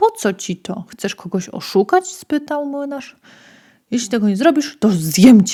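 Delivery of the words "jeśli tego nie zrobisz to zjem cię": loud, growling, menacing tone. Narrator reading a fairy tale, the wolf speaks to the miller, growled. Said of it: "Warknął wilk".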